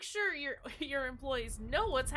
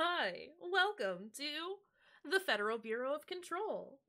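put-on automated voiceover, slow and polished; 5 dB quieter than usual. While setting a phone timer, a bit in a put-on welcome-message voice. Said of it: "That kind of voice?".

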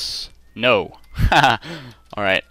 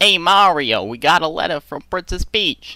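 terrible, hammy, high-pitched put-on cartoon voice; 7 semitones higher than usual. Reading a letter from Princess Peach in character: Luigi voice. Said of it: "That's a terrible Luigi voice".

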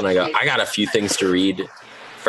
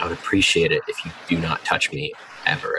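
grave, lowered, somber serious voice; 3 semitones lower than usual. Retelling their reaction when someone touches their head: acting out a dropped, serious voice. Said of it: "my voice drops and I go".

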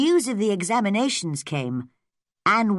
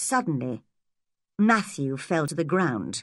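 ordinary delivery

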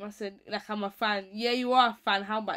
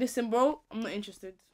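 ordinary talk

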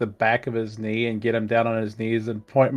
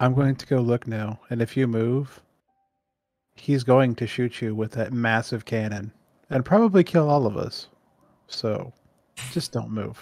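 slow, confiding, private-sounding stage whisper. Warning a companion in character not to move: half-whispering in someone's ear. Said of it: "I'm just gonna whisper in his ear".

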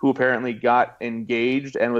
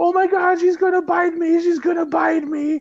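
acted very high, panicked, terrified little-kid shriek. Telling a story about a child afraid of a dog, imitating a terrified child screaming. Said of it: "was screaming".

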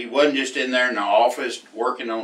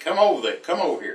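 put-on light, hollered calling-out voice; 4 semitones higher than usual. Recalling a man at a horse sale calling the speaker over, retelling a holler. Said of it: "he hollered at me".

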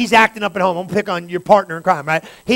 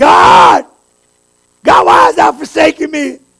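very slow, loud, high, drawn-out anguished cry; 6 semitones higher, 6 dB louder than usual. Speaker acting out praying and crying at home, a mock anguished plea. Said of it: "You got the reenactment at the house".

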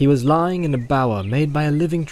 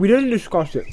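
talking with mouth full, much higher pitch; 6 semitones higher than usual. Answering a companion's question while eating, talking with mouth full. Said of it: "said Frodo, with his mouth full".

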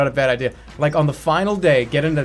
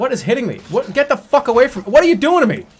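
panicked, alarmed screaming, rising; 8 semitones higher, 3 dB louder than usual. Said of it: "I just screamed again".

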